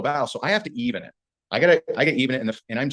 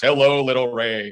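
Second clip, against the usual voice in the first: full, resonant, dominant, condescending top-dog voice; 4 dB louder than usual. Retelling how she greeted the speaker, imitating her resonant voice. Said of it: "She even had this like like resonance in her in her voice".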